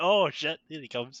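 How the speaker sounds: ordinary talk, nothing marked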